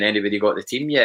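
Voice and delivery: put-on sarcastic voice. Quoting people asking on Twitter about the leaked team: imitating a sarcastic question. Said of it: "sarcastically saying".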